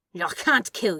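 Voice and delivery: through gritted teeth. A demon answers an angel, speaking through gritted teeth. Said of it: "through gritted teeth".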